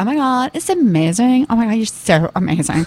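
put-on, very American way of talking. Complaining about their 22-year-old daughter, the parent quotes her: imitating daughter's American accent. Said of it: "the way she speaks is so American".

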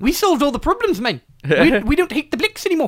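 put-on South African accent. Trying out accents in conversation, now switching to a South African accent. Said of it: "now I'm doing South African".

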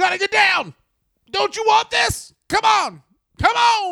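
pumped-up, very high jock-dad coach hollering. Retelling how a wrestling trainer yelled at trainees: imitating Billy Gunn yelling like a jock dad. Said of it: "I'm a jock dad man kind of way".

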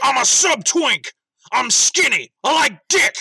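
high, pronounced announcer read. Repeating the other speaker's ad reading, like Alex Jones. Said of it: "The way you said that was like fucking Alex Jones".

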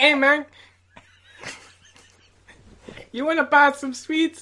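put-on Mexican accent, comic. Doing a whispered accent for the others to guess: put-on Mexican accent. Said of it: "it's like a little Mexican".

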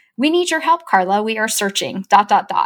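normal talking voice

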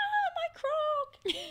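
piercing, very high, loud scream. Retelling what someone did down the hallway: imitating someone screaming. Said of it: "she's, like, screaming".

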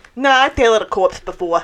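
put-on heavy, thick, laid-on Jersey accent. Voicing the old man in the scene: thick Jersey accent. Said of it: "I love the idea of him having a thick, like, Jersey accent".

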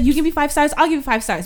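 rapid-fire words tumbling out at speed. Retelling what a man says while getting out of an Uber, rapid-fire quoting. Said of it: "But he says it so fast".

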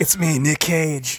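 sick-sounding, under-the-weather voice. Phoning in a skit call as Nicolas Cage: Nicolas Cage impression. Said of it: "You sound sick".

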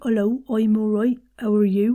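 put-on West Country accent. Explaining how the oi sound works in an accent, West Country accent. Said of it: "For the West Country accent".

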